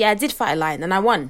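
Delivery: ordinary delivery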